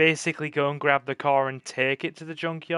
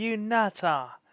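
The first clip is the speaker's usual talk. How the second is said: broad put-on Cockney, laid on thick, pitched up; 6 semitones higher than usual. Echoing another voice's shout, in a full Cockney accent. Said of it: "Love it when Cockneys go full Cockney".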